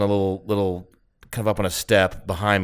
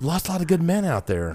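higher pitch; 8 semitones higher than usual. Quoting a line from Wedding Crashers about the war: quoting a Wedding Crashers line. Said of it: "it sounds just like the Wedding Crashers".

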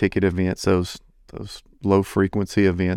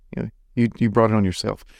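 mock bitter and mean tone. Retelling what goes through own mind: imitating a bitter, mean tone. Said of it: "I sound so bitter and so mean".

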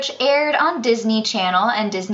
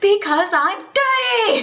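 put-on shrill, very high small-child scream; 10 semitones higher than usual. A parent retells the child's outburst about going to bed, imitating a child screaming. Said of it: "Why is that what you're screaming?".

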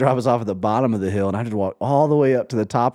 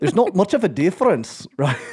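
tentative put-on Scottish accent, pitched up; 7 semitones higher than usual. Asked to practice a scottish accent, the speaker tries one out: scottish accent. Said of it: "can you practice your Scottish accent?".

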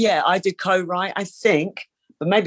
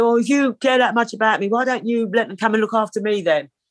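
reenacted screaming, higher pitched and faster; 4 semitones higher than usual. Retelling an argument, quoting their past self screaming at her: retelling a scream. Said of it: "And I'm screaming at her".

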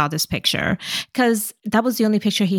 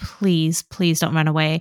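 mock pleading, lower; 3 semitones lower than usual. Retelling a scene where the dad begs her not to run away: imitating someone begging. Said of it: "he begs her to not run away".

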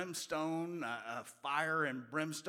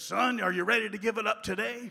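put-on gruff, gravelly old preacher voice, higher; 7 semitones higher, 10 dB louder than usual. Retelling what the old preacher said to him at the altar, gruff and gravelly. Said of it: "in his gruff and gravelly voice".

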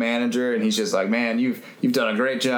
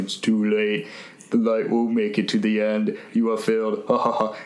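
put-on very deep voice. Retelling the manager's answer about the light in a really deep voice. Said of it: "goes into a really deep, deep voice".

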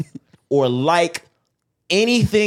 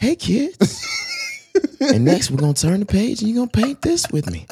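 put-on gentle TV-host patter, pitched-up and swooping; 5 semitones higher than usual. Two friends talk about Bob Ross, and one does a Bob Ross impression. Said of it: "Why are you talking like that".

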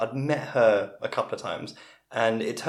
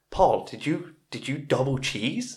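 put-on American accent, pitched higher; 3 semitones higher than usual. Retelling a party story, quoting Darren: imitating Darren's American accent. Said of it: "this is a very good impression of him".

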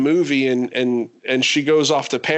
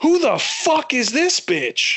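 mock very high, swooping, stretched-out scream; 11 semitones higher than usual. Recounting a moment in a movie theater, retelling a scream out loud. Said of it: "I screamed out loud".

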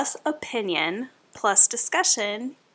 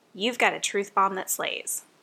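ordinary delivery

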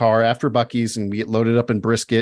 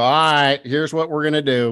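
put-on Texan voice, higher pitch; 4 semitones higher than usual. Calling a friend up and doing the impression: Gary impression. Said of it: "I just call him up now and just go".

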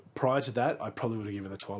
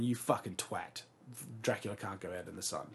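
usual speaking voice

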